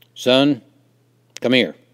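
firm, booming call, very loud. A narrator reads his daddy calling him over, in a firm voice. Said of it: "My daddy said in a firm voice".

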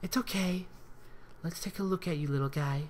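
tender, gentle, soothing cooing voice. Kneeling over a whimpering puppy, she speaks to it, cooing. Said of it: "she cooed".

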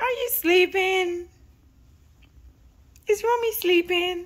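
put-on high-pitched cooing baby talk.

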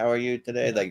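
put-on alien voice. Speaker showing how the aliens in a documentary talk, alien voice. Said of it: "Like those aliens".

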